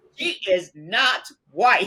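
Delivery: high, slow, drawn-out indignant tone. Retelling what Mom said when asked about a sister's skin: imitating Mom speaking indignantly. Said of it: "she very indignantly said to me".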